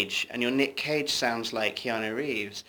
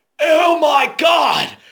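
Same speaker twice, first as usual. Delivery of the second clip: very high, very loud, shrill, intense scream; 12 dB louder than usual. Showing how an impression of Nick Cage sounds: Nick Cage voice. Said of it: "Nick Cage is just a hair more intense".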